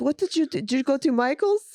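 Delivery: put-on Israeli accent. Imitating a man's questions about the lipstick, in a thick Israeli accent. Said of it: "He's got a really thick Israeli accent".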